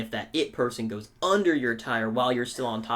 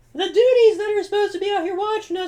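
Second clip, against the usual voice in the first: put-on pained scream, higher and louder; 9 dB louder than usual. Retelling breaking an arm and calling to friends: imitating screaming in pain. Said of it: "I'm just screaming".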